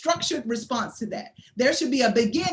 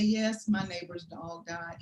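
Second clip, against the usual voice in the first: gentle, empathetic, low, soft sympathetic voice; 6 semitones lower, 8 dB quieter than usual. Demonstrating showing empathy in conversation, lowered, sympathetic voice. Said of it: "you want to show empathy, and you may want to lower your voice".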